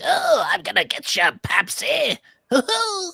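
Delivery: gravelly animated villain voice. Showing how his Skeletor is basically Joker, do a Skeletor voice like Joker, bit more growl. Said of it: "his Skeletor is basically Joker with like a bit more growl".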